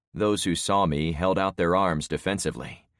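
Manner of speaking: ordinary delivery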